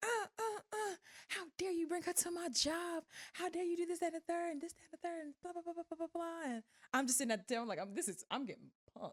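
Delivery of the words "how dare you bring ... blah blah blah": put-on yelling, higher. Retelling a waiter confronting him at her job: imitating someone yelling. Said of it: "She yells his name out".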